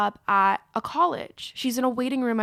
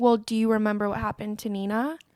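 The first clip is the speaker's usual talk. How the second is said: usual speaking voice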